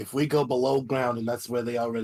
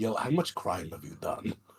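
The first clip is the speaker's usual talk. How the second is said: private aside, voice dropped right down, very low, hushed; 5 semitones lower, 5 dB quieter than usual. In a game, a character turns to Jotun and asks him, very low voice. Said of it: "just in a very low voice".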